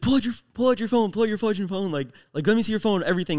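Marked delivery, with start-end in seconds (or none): none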